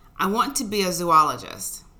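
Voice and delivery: ordinary delivery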